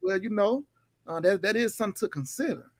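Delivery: put-on level, low, unemotional, passionless tone. Describing how a man would have answered Alan, the speaker imitates a voice without passion. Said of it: "he wouldn't have had the passion in his voice".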